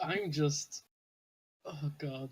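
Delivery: laughing mid-sentence while talking. A player reacts to another player's scene, laughing while talking. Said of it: "you laughing at this moment?".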